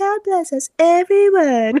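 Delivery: whiny voice, very high and slow. Quoting the closing line of A Christmas Carol, in a whiny Tiny Tim voice. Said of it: "you have to say it in the Tiny Tim voice".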